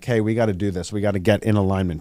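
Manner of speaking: ordinary talk, nothing marked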